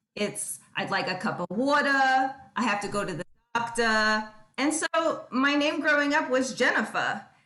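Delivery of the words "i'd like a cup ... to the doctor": New York accent with dropped R's. Showing how people from new york talk, in a new york accent with dropped r's. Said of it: "if you're from New York ... we don't pronounce the R's at the end of our words".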